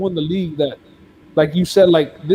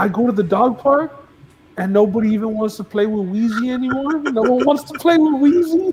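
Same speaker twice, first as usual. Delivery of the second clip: acted, high, teary voice breaking; 6 semitones higher than usual. Retelling a man's interview, the speaker imitates his voice breaking. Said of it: "His voice started like breaking".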